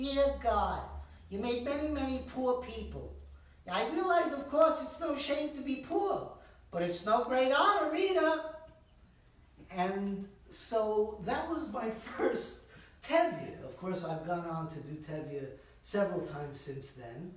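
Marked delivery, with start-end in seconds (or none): 0.0-8.4 put-on pitched-up Bronx accent. Recalling playing Tevye at eight in a community-center Fiddler on the Roof, Bronx accent. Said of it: "with a Bronx accent".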